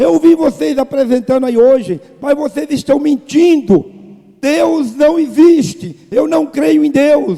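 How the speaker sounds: loud, high-pitched yelled outburst. Retelling a young woman interrupting a street play, imitating someone shouting. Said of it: "começou a gritar".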